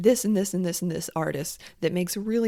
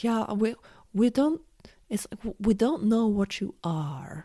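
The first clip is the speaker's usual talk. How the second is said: terrible, poorly done put-on German accent; 3 semitones higher than usual. Retelling what a performer said about german cabarets: terrible german accent imitation. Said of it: "my terrible, um, attempt at replicating his German accent".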